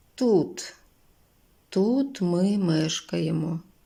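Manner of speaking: put-on worn-out, weary, tired old woman's voice. An old woman answers visitors who are looking for someone, tired. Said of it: "втомлено відповіла їй бабця".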